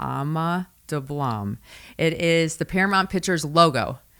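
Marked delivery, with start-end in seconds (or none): 0.0-1.6 very slow delivery, each syllable stretched out. A speaker repeats a mountain's name for the listeners, very slow. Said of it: "I say that very slow".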